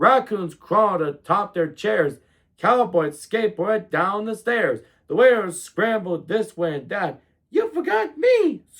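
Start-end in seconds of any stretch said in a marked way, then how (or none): 7.5-8.6 very high, tiny, squeaking rat voice. Reading a story aloud, the narrator voices the rat, squeaky rat voice. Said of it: "squeaked the rat".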